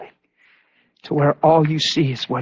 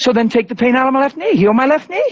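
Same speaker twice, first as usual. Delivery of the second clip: mocking, sarcastic tone.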